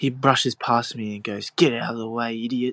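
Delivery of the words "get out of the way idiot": put-on rude, dismissive voice. Retelling how a top Oztag player brushed past, retelling a rude remark. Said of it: "So much ruder than I expected".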